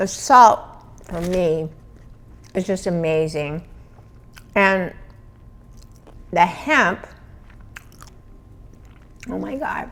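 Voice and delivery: talking with mouth full of food. Tasting food for an audience, talking with mouth full. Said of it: "My mouth is full".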